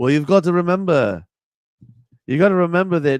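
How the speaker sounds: nasal put-on Liverpool accent. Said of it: "John's is more nasally".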